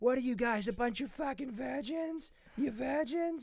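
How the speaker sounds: put-on high-pitched, drunken screaming. Retelling drunkenly screaming at people from a cab: drunk screaming at people. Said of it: "screaming at people from the cab".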